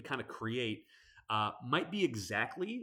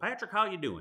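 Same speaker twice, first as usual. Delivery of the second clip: put-on pitched-up Southern accent; 7 semitones higher, 4 dB louder than usual. Recalling how a caller always greeted him, in a southern accent. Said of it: "say in his like, you know, Southern accent".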